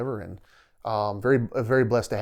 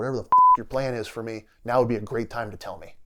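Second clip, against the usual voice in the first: put-on angry voice. Retelling how she yelled at God in her driveway, retelling an angry rebuke. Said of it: "angry and just like rebuking God".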